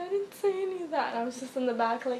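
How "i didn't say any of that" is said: put-on high, sobbing little boy's voice. Retelling a boy being tattled on, imitating a crying boy. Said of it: "And he's crying".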